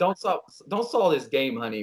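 ordinary talk, nothing marked

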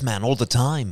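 put-on Liverpool accent. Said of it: "I started talking like this".

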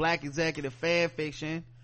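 usual speaking voice

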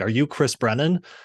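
shrill, startled, top-of-lungs scream. Telling of a woman in a store spotting him, the speaker retells her scream at the top of her lungs. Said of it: "she screams like at the top of her lungs".

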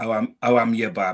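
Wolverhampton yam-yam dialect. Explaining the local greeting in Wolverhampton, imitating Wolverhampton locals. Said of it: "they're known as yam yams".

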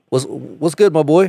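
confrontational, challenging tone.

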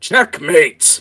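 put-on shrill, very loud, high old man cry. Voicing an old man winning at chess: old man character voice. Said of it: "this time the old man goes".

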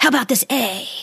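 whispery salesman voice. Describing a shady Sesame Street salesman, speaker imitates him offering a letter: whispery salesman voice. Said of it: "he speaks in a whispery voice".

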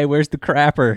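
put-on Southern accent. Imitating the other speaker walking in and asking for the toilet, in a southern accent. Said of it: "You come in with your southern accent".

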